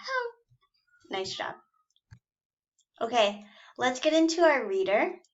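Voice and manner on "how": squeaky, tiny, very high little mouse voice. Leading a reading exercise, saying the word like a mouse. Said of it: "Say it like you're a mouse".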